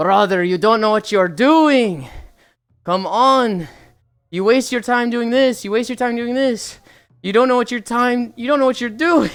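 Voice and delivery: put-on raging voice in Russian accent. Retelling how a player raged at another in a CS game, retelling a raging player, Russian accent. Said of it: "Nice Russian accent".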